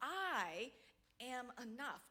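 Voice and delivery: the word I hit hard with emphasis. Repeating I am enough with different emphasis: stress on I. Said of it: "put emphasis on different words... Like taking that I".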